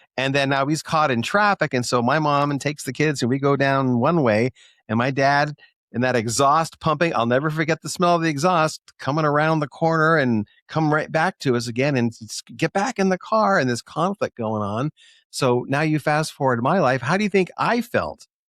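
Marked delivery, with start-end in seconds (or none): 12.6-13.6 acted-out, high, raised, screamed delivery. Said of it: "screaming back".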